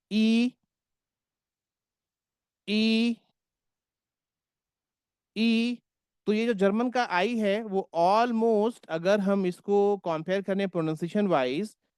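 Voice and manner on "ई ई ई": stretched ई vowel held long. German pronunciation lesson, stretching the vowel: ई drawn out long. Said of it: "मैं थोड़ा खींच रहा हूं इसको".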